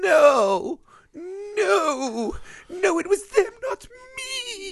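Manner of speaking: very high, very slow, crying, whimpering voice. Describing a movie character collapsing at the end, the speaker imitates him whimpering. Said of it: "He's like whimpering like".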